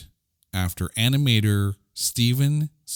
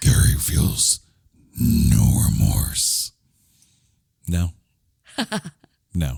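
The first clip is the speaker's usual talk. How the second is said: low, deep cartoon villain voice; 4 semitones lower, 3 dB louder than usual. Closing a discussion of a character, in the Dr. Claw voice. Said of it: "in the Dr. Claw voice".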